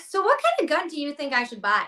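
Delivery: put-on valley girl talk, high and swooping. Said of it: "talk like a valley girl".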